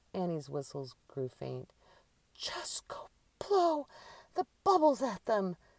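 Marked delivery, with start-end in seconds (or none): 2.3-5.5 put-on very high, raised, short-of-breath wheezing voice. Narrating Annie, whose asthma is kicking up, speaking to Drew: wheezing. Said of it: "she wheezed".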